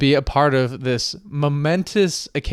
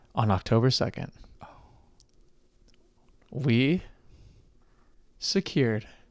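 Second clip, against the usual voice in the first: slow, teasing, drawn-out suspenseful build-up; 7 dB quieter than usual. A host recording an episode for listeners, talking slowly to build suspense. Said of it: "I'm really talking slow because I want to build it up".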